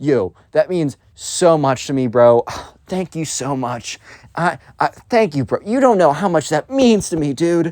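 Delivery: fake tearful, choked-up voice. Acting out your reply to being told you smell, mock tearful thanks. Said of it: "I'm tearing up right now".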